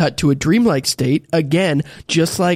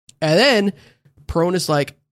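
ordinary talk

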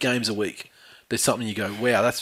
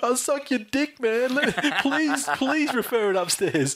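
play-acted whiny begging, very high-pitched; 13 semitones higher than usual. Retelling how a player begged after a held-up try: imitating Hargraves whining and begging. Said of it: "he's like going".

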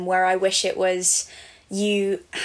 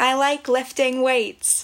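put-on American accent, higher pitch; 5 semitones higher than usual. Taking turns trying accents, repeating a sentence about exercise, in an american accent. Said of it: "Try it and then I'll try yours".

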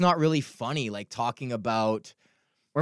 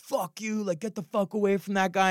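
hollered, enraged, furious cursing yell; 7 semitones higher than usual. Recounting what they yelled at a woman that night, retelling a yell. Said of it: "And I'm yelling".

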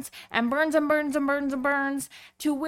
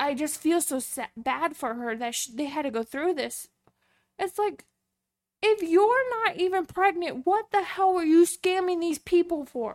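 on the verge of crying, voice about to break. Speaking to viewers right after apologizing to them: on the verge of tears. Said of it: "sorry guys like i'm i'm ready to cry".

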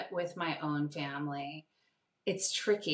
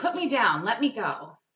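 put-on little girl's loud, drawn-out yell; 4 semitones higher, 6 dB louder than usual. Retelling how the youngest daughter reacted when picked up: imitating a child yelling. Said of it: "she's yelling".

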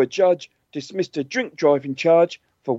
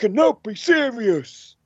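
slow, drawn-out ranting tirade; 4 semitones higher than usual. Recalling a famous tennis tirade during a quiz: John McEnroe impression. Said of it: "that's my impression of John McEnroe".

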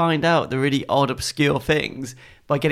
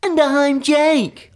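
put-on very high, very loud kids' character voice; 12 semitones higher, 5 dB louder than usual. After a terrible first try, one speaker retries the Jake impression; improving Jake impression. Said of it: "You're getting there".

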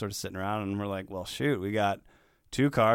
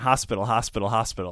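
usual speaking voice

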